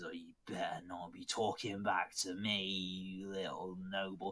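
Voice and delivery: put-on drunken, angry, menacing voice. A man threatens the listener for talking back, drunk angry threat. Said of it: "three quarters cut by now".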